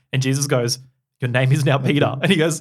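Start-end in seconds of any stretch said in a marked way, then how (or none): none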